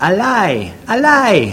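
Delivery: put-on very high, very slow, sing-song Jamaican accent. Quoting the speaker's mother-in-law when she hears something hard to believe, in her Jamaican accent. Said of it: "in her Jamaican accent".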